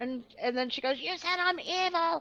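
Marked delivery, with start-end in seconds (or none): 1.0-2.2 high, mock screaming, accusing, words stretched out. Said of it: "She started screaming".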